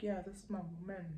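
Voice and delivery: attitude-filled delivery. Retelling what the ex said about his new partner: imitating someone saying it with attitude. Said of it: "With an attitude".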